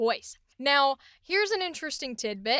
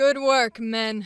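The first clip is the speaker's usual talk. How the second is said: low voice, raised and projected; 6 dB louder than usual. Voicing Lady Nira's neutral dialogue line in a low voice. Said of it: "I love the low voice".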